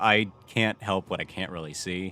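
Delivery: ordinary talk, nothing marked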